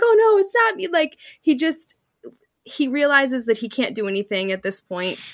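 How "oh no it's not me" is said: mock laughter, stuttering, much higher and louder. Retelling Coach backtracking when caught, imitating loud stuttering laughter. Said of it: "he's laughing so loudly".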